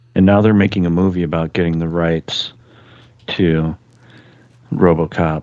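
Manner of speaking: straight-faced, dry, deadpan, flat monotone delivery. Telling the others something they cannot tell is true: deadpan. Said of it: "You said that so deadpan".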